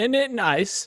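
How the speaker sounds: very high-pitched, very loud British accent. Showing someone how the phrase should be said, in a British accent. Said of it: "It's British, right?".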